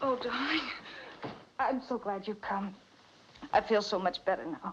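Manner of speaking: voice all shaken up. In a drama, Sheila greets Tom, who sees she is shaken: shaken up. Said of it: "You're all shaken up".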